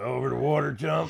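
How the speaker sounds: rough, raspy, creaky throaty voice. Recalling how someone sounded before quitting cigarettes: imitating Ed's raspy voice. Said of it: "And that raspy voice".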